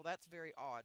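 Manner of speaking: usual speaking voice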